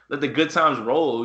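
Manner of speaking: normal talking voice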